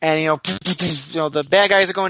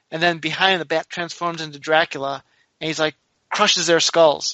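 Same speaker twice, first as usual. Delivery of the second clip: ordinary talk, nothing marked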